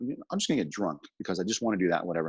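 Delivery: ordinary delivery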